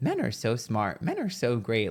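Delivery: tongue-in-cheek, sarcastic, swooping sing-song delivery. Showing how a lyric could be said tongue in cheek: sarcastic. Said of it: "kind of, like, sarcastic".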